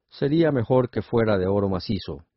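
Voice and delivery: plain reading voice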